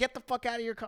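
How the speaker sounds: mock shrill, high-pitched yell. Telling a sibling about a car incident, imitating a lady yelling. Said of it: "The lady was yelling like".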